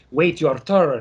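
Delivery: strange Russian accent. Give what your brain says while you stand in a line, in Famke Janssen's weird Russian-esque accent. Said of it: "in that weird Russian esque accent".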